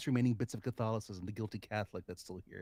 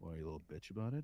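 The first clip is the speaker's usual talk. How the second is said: unbothered, low, calm radio-announcer voice; 5 semitones lower, 7 dB quieter than usual. Retelling what a guy said to them, the speaker imitates his low radio voice. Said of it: "has a very low, great radio voice".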